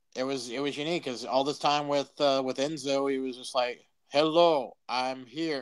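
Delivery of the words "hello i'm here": flat, mechanical, robot-like voice. Imitating how Big Cass talked alongside Enzo: robotic Big Cass impression. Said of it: "sounded so robotic".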